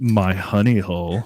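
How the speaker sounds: put-on, loaded, suggestive, provocative tone. Denying having said a phrase that way, acting it out: mock provocative tone. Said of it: "I wasn't all like".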